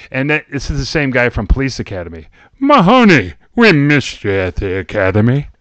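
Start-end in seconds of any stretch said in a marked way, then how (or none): 2.6-5.4 loud, slow, deliberate, drawn-out, swooping pitch. Continuing the George Gaines impersonation as his Police Academy character. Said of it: "my George Gaines impersonation".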